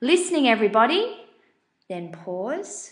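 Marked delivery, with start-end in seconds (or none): 0.0-1.2 raised, louder calling voice. Explaining classroom technique, the speaker shows a teacher calling the class in a louder tone. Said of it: "the teacher might say in a louder tone".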